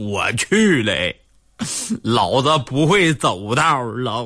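put-on clenched-teeth speech. Telling a joke, giving the centipede's punchline, acting out gritted-teeth speech. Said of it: "咬着牙说".

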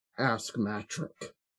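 soft, low growl under the breath. A character answers two hostile Sith officers, growling. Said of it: "He growls".

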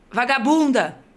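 shouted in an acted old woman's voice. Retelling an elderly woman yelling an insult at her, retelling a shouted insult. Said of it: "uma senhora velhinha gritou assim".

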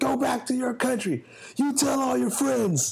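mock yelling, pitched high and barked out.

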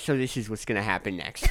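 fast, lisping know-it-all nerd voice. Describing a nerd predicting what happens next in a Marvel movie; nerd impression. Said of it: "your nerd impression as someone who had a lisp".

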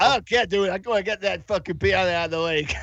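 put-on Boston accent.

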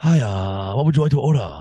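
English spoken in a put-on Japanese accent. Joking about the name Hachimura, playing a server taking an order; put-on Japanese accent. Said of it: "It's a pretty good Japanese accent".

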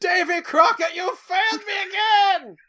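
shrill, very high, slow, drawn-out scream. Recounting what a husband screamed after dropping to his knees: retelling a scream. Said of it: "just screamed".

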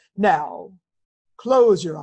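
eerie hypnotic voice, low, very slow and drawn out. Retelling a guided meditation at a conference: imitating Joe Dispenza's creepy hypnosis voice. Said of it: "he's talking perfectly normal, and then he goes".

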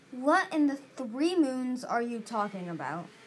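ordinary delivery

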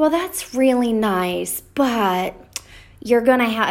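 put-on nice surface, passive-aggressive, needling tone. Retelling what she said about the speaker going all in, mimicking a passive-aggressive tone. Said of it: "she just has this passive aggressive way, this tone".

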